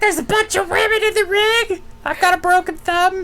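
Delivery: high-pitched, pissy, whining delivery. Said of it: "He's all pissy".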